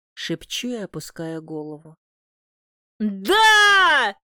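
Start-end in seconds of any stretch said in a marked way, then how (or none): 3.0-4.1 very high, drawn-out, stretched shout. Narrator reads Matvey's reply to the heroine's whispered news, shouted. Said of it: "Выкрикивает Матвей".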